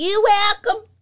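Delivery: shouting. Answering a thanks for the reminder, yelling. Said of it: "Why you yelling?".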